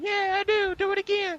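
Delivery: silly eager voice, very high, loud squeal.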